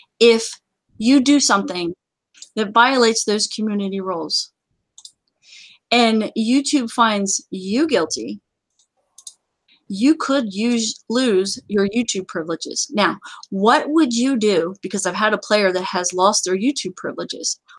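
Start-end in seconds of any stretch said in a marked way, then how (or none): 0.2-12.9 spelled out very slowly, word by word, deliberate. Explaining YouTube community rules to the audience: very slowly. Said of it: "I'm going to say that very slowly".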